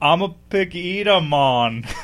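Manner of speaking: fake Jamaican accent, very slow and drawn out. Trying an accent when asked for one: put-on Jamaican accent. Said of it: "automatically Jamaican".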